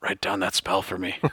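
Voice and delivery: acted secretive whisper. Retelling how Chad whispers to Melvin, acting out a secret whisper. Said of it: "kind of clandestinely whispers".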